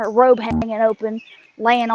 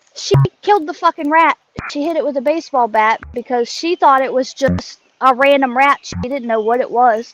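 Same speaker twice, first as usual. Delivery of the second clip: ordinary talk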